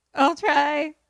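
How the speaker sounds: loud voice crack, breaking very high. Retelling a film scene, quoting a character's reply: imitating a voice crack. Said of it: "Voice crack, voice crack".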